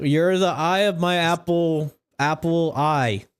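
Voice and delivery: put-on slow, slurring, drunken speech. Voicing a drunk character who turns around: drunk slurring. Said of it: "He's already slurring".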